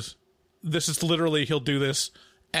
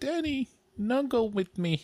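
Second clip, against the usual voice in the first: put-on high, tiny three-year-old toddler voice; 8 semitones higher than usual. Telling about a three-year-old, the speaker imitates his little toddler voice. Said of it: "He's got the little voice like".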